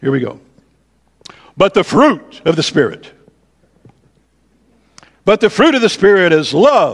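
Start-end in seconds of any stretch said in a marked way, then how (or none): 1.6-6.9 loud, high, emphatic prophetic preacher voice. Reading a bible verse aloud in a prophetic voice. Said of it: "I have to use my prophetic voice".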